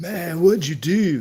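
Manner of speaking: high, slow, stretched-out man's voice. Retelling an argument about a rust-painted motorcycle, imitating a man who argued. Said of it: "He talked like that too".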